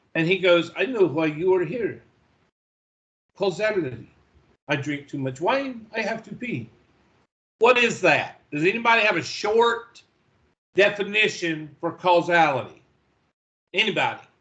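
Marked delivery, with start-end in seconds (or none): 0.7-6.7 put-on French accent. Retelling a movie scene to a group, voicing the restaurant owner, French accent. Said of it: "he's got a French accent".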